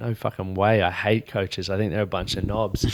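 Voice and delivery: ordinary talk, nothing marked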